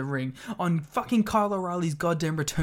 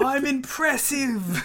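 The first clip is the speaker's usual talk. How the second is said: put-on British accent pitched very high; 10 semitones higher, 3 dB louder than usual. Acting out a wrestler's trash talk, slipping into a put-on British accent. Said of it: "I'm going British".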